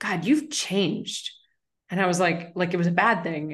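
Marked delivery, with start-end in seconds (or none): 0.0-1.3 mock patronizing, superior, most condescending tone. Retelling an old college roommate's remark, in a mock-condescending tone. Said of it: "with the most condescending tone".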